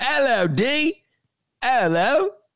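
fake, put-on British accent, very high. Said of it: "speaking with a British accent".

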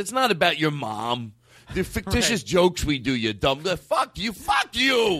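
put-on slight New York accent. Retelling a friend's angry comeback about mom jokes: imitating a slight new york accent. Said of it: "a little bit of a New York accent".

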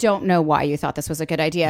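normal talking voice

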